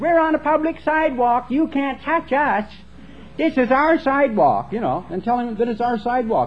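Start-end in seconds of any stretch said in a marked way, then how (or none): 0.0-4.7 put-on small, chirpy, pitched-up little kid voices. Retelling how the kids taunted a man from the sidewalk, in a chirpy little voice. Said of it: "we would chirp with the little voices".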